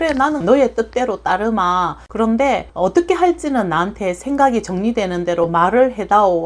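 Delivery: plain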